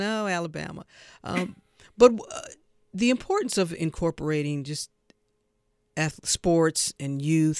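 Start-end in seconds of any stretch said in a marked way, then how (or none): none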